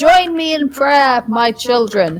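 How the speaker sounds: resounding voice. Role-playing a character whose voice keeps going, in a booming voice. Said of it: "Amber's booming voice continues".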